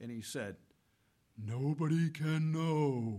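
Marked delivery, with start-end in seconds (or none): 1.4-3.2 pious, solemn, reverent sermon-like voice. Retelling what a priest answered him at a soccer game, in his stained-glass voice. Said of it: "in his stained glass voice".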